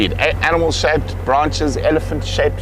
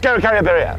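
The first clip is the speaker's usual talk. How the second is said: rapid, high rattled-off delivery; 6 semitones higher than usual. Giving a hint by saying a scientific name, name said really quickly. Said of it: "I'll say it really quickly".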